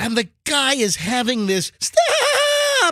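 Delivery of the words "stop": put-on very high, stretched-out weeping wail. Imitating a man crying as police remove him: imitating a crying man. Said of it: "crying as they're removing him".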